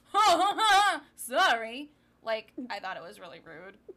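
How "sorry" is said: high, loud, laughing mock-sorry tone. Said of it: "and be like".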